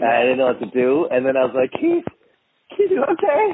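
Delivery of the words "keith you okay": very high-pitched sitcom-style voice. Retelling calling out to Keith after kicking the door, use a high-pitched Brady Bunch voice. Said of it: "Got the whole high-pitched, Brady Bunch voice".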